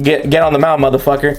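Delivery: normal talking voice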